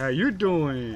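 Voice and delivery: put-on slow, drawn-out New York accent.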